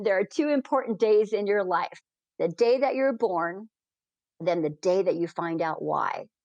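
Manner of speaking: ordinary talk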